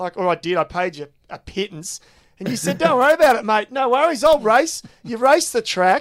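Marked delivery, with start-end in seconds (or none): 2.8-4.8 put-on high, loud, broad Bundaberg Australian accent. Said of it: "you had this accent".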